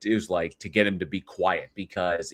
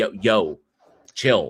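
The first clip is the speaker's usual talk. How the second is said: put-on fatherly, calming, settling dad voice; 4 dB louder than usual. Describing how they shut up a person who interrupts, in a dad voice. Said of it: "dad voice him to get him to shut up and be like".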